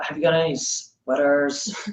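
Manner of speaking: soft, put-on American accent. Retelling asking Target staff for sweaters, in his best American accent. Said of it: "In his best American accent".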